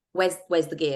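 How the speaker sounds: ordinary delivery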